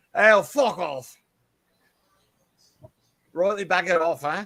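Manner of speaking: poor put-on Australian accent. Told to talk like an Australian redneck, the speaker tries a bad fake Australian accent. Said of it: "That was pommy".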